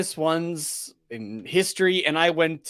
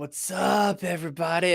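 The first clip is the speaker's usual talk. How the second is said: lazy, stretched-out, drawn-out hippie stoner drawl; 3 semitones higher than usual. Showing how to draw out the greeting: drawn-out stoner voice. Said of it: "draw it out just a little bit more".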